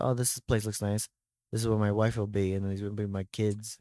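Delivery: ordinary talk, nothing marked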